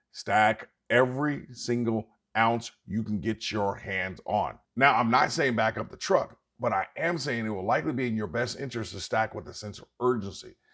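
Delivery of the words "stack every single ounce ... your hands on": slow, spelled-out delivery. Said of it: "Let me say it slowly".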